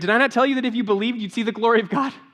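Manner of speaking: loud, high-pitched, direct yelling. Retelling a Gospel story while Mary is off crying: imitating Jesus yelling at Martha. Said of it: "he's like yelling at Martha".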